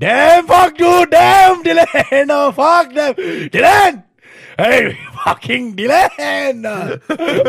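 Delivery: mock furious yelling, very high and drawn out. Riffing on a bit, the speaker mock-angrily imitates an Indian guy yelling. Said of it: "an Indian guy to yell very angrily".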